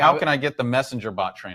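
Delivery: ordinary delivery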